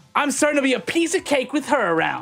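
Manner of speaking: confident, self-assured tone. Voicing a character who folds his arms and grins: confident. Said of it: "give, like, you guys a pretty confident grin and goes".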